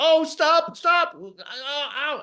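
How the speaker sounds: very high, very slow, drawn-out put-on 'ow' cries. Retelling how a big man grabbing them faked being hurt, imitating his fake pain cries. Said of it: "he's going".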